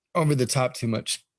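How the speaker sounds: sudden hiccup gasp breaking into the sentence. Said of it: "God damn, I got the hiccups".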